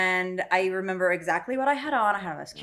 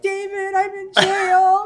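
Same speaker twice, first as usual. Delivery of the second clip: put-on crying voice, higher and louder; 11 semitones higher, 7 dB louder than usual. Retelling a phone call from jail to pick her up: imitating her own crying. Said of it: "And I'm crying. I'm like".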